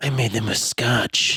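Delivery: low, seductive, come-hither stage whisper. Recapping a movie, quoting a woman's line as she whispers it, whispered. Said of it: "and then she whispers".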